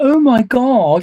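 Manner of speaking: put-on very high, loud Valley accent. Complaining about an anime dub, mimicking a character: Rio in a Valley accent. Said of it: "in a Valley accent".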